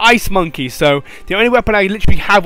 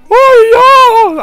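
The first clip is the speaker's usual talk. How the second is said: put-on cry, much higher, louder; 8 dB louder than usual. Playing a game after reading quest details, imitating a character's cry. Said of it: "That's the noise she makes. That was the best impression there".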